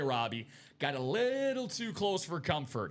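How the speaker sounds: plain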